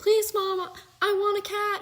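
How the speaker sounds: put-on high, childlike, pleading, begging kid voice. Retelling how a boy begged their mom for a cat: imitating a child begging. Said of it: "And he kept begging".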